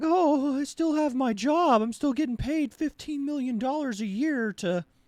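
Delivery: very high, tearful, weepy crying lament. Mocking a critic who still has his job: mock crying as Jimmy Kimmel. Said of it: "he's out there crying like".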